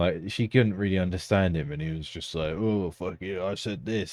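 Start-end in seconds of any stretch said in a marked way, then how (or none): 2.5-4.1 play-acted rude, dismissive tone, slow. Retelling how a customer snapped at a fast food worker: imitating someone being rude. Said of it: "he was a bit fucking rude though".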